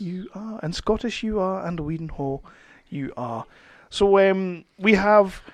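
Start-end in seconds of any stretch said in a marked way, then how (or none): 0.0-3.4 hushed, documentary narrator voiceover delivery. Introducing a podcast co-host, address him in a documentary narrator voice. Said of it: "very documentary voice there".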